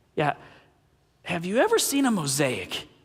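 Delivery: acted fond sarcasm with swooping pitch. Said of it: "in his most loving, sarcastic way".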